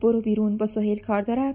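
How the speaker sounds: ordinary delivery, nothing marked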